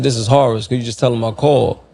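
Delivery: ordinary delivery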